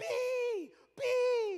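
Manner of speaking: very high, very loud frantic shriek. Retelling a moment in the water, a mom calling her son's nickname, imitating Soti's scream. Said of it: "I just hear at the top of her lungs".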